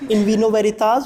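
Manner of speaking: ordinary talk, nothing marked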